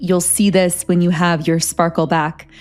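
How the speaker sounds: plain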